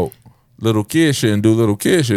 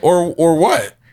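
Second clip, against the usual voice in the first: mock puzzled, confused, bewildered, at-a-loss voice; 8 semitones higher than usual. Recounting how they reacted back then, acting confused. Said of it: "I was more like confusion".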